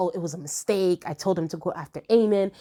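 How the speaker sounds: ordinary delivery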